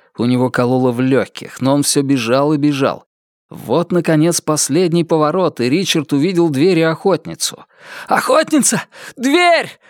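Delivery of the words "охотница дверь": very high-pitched, winded, breathless shout. Richard, after running down a spiral staircase, calls to the huntress and Door, breathless shout. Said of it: "задыхаясь, закричал он".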